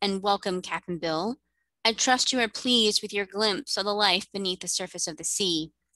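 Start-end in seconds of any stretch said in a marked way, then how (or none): none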